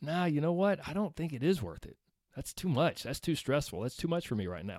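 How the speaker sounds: soft, sagging, reluctant, worn-out, deflated no.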